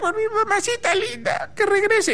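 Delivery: acted, very high, weepy, whiny little-kid whimper. Speaker retelling how a boy cried when his mother left for work, imitating a crying child. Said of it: "lloraba porque su mamá se iba a trabajar".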